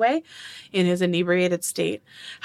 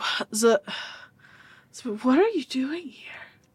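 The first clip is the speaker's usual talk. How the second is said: slightly tipsy speech, higher; 6 semitones higher than usual. Voicing a father who finds two people on his boat: a little drunk. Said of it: "you can tell he's a little drunk".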